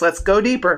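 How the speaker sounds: ordinary talk, nothing marked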